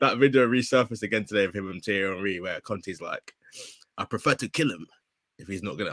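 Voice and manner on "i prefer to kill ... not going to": laid-on, put-on Eastern European accent. Quoting Conte from a resurfaced video with Thierry Henry, in a put-on Eastern European accent. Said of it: "I put on some Eastern European accent".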